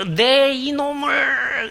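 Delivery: furious growl, high-pitched and drawn out slowly.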